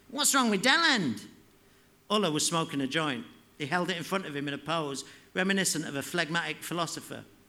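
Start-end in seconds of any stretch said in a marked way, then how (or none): 0.2-1.2 whiny, loud, high-pitched shout. Reading a story aloud, Slacko shouts over the others' laughter: Slacko's whiny shout. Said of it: "Slacko shouted in his annoying, whiny voice".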